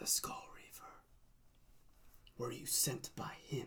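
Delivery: very hushed whisper, close up. Voicing a man who leans in to the players: whispering. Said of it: "He leans in and whispers".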